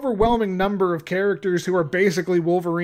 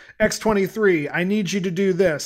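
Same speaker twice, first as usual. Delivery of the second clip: usual speaking voice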